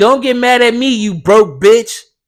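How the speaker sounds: furious, loud, high, angry scream. Retelling screaming back at a woman through the car window, retelling a scream. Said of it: "I screamed back at her".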